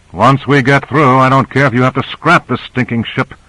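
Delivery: ordinary delivery, nothing marked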